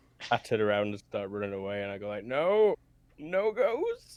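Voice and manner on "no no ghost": very high, loud, swooping, wailing terrified sob. A player's character turns and runs from a ghost, crying in fear. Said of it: "And I'll start crying".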